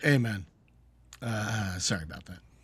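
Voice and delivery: low, low-key, offhand, easygoing delivery. Retelling how a show character apologized: imitating Mike's low-key apology. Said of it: "The way he says it, though".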